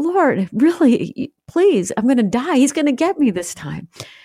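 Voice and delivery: play-acted hurt, high, broken-hearted, devastated tone. Retelling crying out to god against the wall, retelling a devastated plea. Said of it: "I was devastated. I was hurt".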